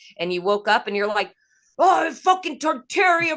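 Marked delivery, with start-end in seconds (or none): 1.8-3.4 angry complaining outburst, higher and louder. Retelling how another speaker woke up and complained: imitating someone angrily complaining. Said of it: "You were pissed".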